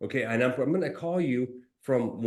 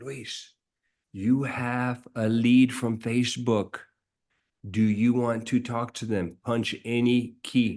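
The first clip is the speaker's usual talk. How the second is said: mimicked soft little whisper, slower. Retelling how an automated phone call announces a Facebook lead, imitating a little whisper. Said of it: "it says in a little whisper".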